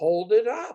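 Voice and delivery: put-on strong, laid-on Scottish accent. Retelling what an old nun asked while knitting: imitating a very scottish accent. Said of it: "in her very Scottish accent".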